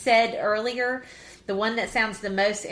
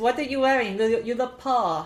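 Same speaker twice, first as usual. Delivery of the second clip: bad, fake put-on German accent, nose-pinched nasal; 2 semitones higher than usual. Quoting an actress's first line in her odd German accent. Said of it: "That sounded like some kind of accent".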